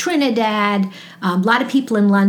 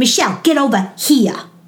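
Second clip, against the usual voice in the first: put-on stern scolding motherly voice; 2 semitones higher than usual. Recalling kids annoying her, channeling her mother: imitating mother's scolding voice. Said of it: "I would channel my mother and it'd be like".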